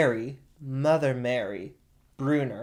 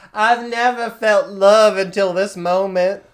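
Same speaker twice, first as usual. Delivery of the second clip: put-on weepy woman's voice, higher and louder; 6 semitones higher, 11 dB louder than usual. Retelling what Patricia Krenwinkel said after Charles Manson's compliment, imitating Patricia Krenwinkel's voice. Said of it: "her voice probably didn't sound like that".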